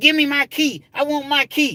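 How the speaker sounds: put-on very high, upset woman voice. Telling a story about giving back a house key, imitating an upset woman. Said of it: "when women get upset".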